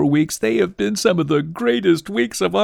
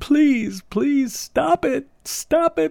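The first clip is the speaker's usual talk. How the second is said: mock crying, high-pitched, tearful, hard pleading; 7 semitones higher than usual. Recalling to the listener how they pleaded with a cat, imitating crying and begging. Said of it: "crying, saying, begging, begging him".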